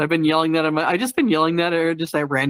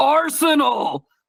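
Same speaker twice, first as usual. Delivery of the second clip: put-on, very high, joy-filled, joyful exclamation; 10 semitones higher than usual. Describing their verbal tics, the speaker shows how they sound filled with joy. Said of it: "sometimes I'm just filled with joy".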